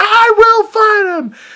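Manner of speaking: very high, drawn-out, acted crazed villain maniac shout. Retelling a movie trailer scene, imitating a maniacal shout. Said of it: "he just shouts like a maniac".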